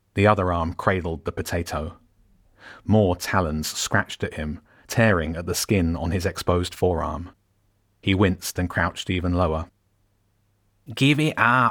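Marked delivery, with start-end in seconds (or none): 10.9-11.7 sharp, high-pitched, demanding tone. A rat speaks to someone clutching a potato under raven attack, sharply. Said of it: "the rat said sharply".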